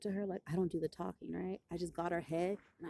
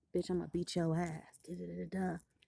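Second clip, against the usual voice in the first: put-on whispering voice. Retelling a girl coming up at lunch: retelling a whispered threat.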